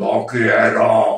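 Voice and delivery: strong, very manly put-on voice, loud and forceful. Retelling how a girl laughed and refused, the speaker imitates her very strong masculine voice. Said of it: "con una voz eh, muy fuerte, muy masculina".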